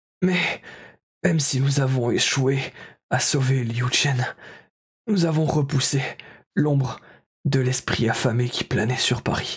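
feeble, weak, fading dying voice. A dying man opens his eyes, sees the group around him, and speaks: dying man's weak voice.

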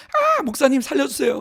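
play-acted very high, wild, swooping scream. Telling how a young woman beside them on a roller coaster reacted; retelling a scream. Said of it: "막 소리를 지르면서".

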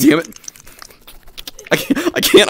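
very high voice, words broken by giggles. Failing a timed stunt with friends, laughing while talking. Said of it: "I'm laughing too hard now".

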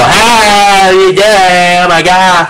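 high, very slow, derisive voice, hey drawn way out. Mimicking how certain people sound when they walk up, high-pitched voice. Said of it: "that's how they sound like, too. ... that high-pitched fucking voice".

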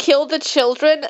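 ordinary delivery

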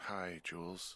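weary voice. Greeting the voice on the radio after being woken, tired. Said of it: "you sound tired".

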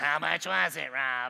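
very low, slow, creaky, drawn-out drawl. Imagining his wife asking Rob a question, in Roz from Monsters, Inc. voice. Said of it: "my wife doesn't sound like this, but in my head, I feel like she turns into Roz from Monsters, Inc. and goes".

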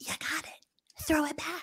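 high-pitched whisper.

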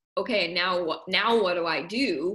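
plain

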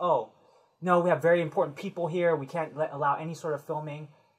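usual speaking voice

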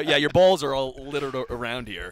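normal talking voice

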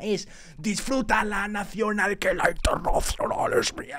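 put-on demonic voice. A viewer repeats a rhyme someone just delivered, in a demon voice. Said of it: "Es que es como una voz de un demonio".

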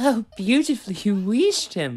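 shrill, very loud, high-pitched laughing delivery. Edward praises Percy after Percy whooshes Henry away; laughing while speaking. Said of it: "laughed Edward".

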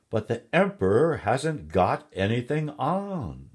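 loud, drawn-out cry, many voices together. Narrator reading the crowd's line once the girl's words spread, crowd crying out together. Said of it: "all the people cried out together".

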